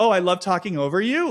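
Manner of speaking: mock feigned surprise, innocent, playing dumb. Retelling a reality show scene, imitating playing dumb. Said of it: "Sierra plays dumb".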